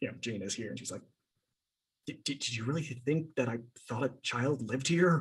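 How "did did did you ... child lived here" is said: hushed, secretive, quiet half-whisper. Playing a character who leans in with a question: half-whispering in character.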